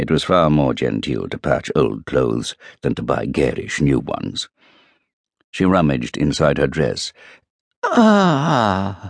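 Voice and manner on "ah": very high, drawn-out triumphant "ah". Reading a story, a woman rummaging inside her dress exclaims, triumphant. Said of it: "this time the triumph was unmistakable".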